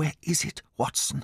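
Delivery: hushed, urgent, shaken whisper. In the silent night, Holmes whispers to Watson. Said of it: "Holmes whispered".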